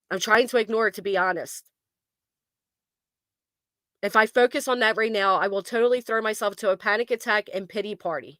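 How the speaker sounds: normal talking voice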